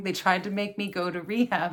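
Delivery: ordinary talk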